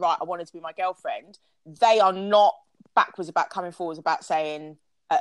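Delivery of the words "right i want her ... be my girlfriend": usual speaking voice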